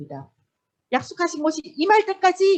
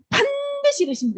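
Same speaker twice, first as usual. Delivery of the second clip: 반드시 stressed hard and firm; 12 semitones higher than usual. Leading listeners in repeating a phrase, stress on 반드시. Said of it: "반드시에다가 액센트를 넣는 거예요".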